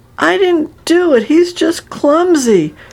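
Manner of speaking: very high, slow, drawn-out protesting tone. A boy answers while being scolded for tripping a classmate, protesting. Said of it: "Garth protested".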